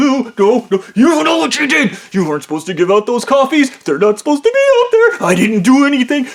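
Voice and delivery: mock indignant, high, swooping, protesting yell. Retelling an argument, yelling at him: retelling own past yelling. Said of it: "I start yelling at him".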